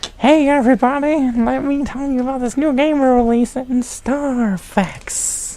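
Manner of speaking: very high, creepy puppet voice. Acting out a puppet advertising the Star Fox game: creepy Kermit the Frog voice.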